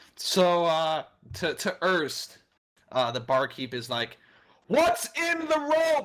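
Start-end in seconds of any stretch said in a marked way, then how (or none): 4.7-6.1 very high, straining yell. Voicing a barkeep yelling a question over a loud horn: barkeep yelling over noise. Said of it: "As he tries to yell over the horn".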